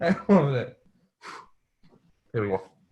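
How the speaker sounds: words broken up by laughing. Host restarting the show intro after flubbing it, laughing while talking. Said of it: "I'm still laughing".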